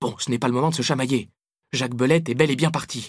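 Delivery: ordinary delivery, nothing marked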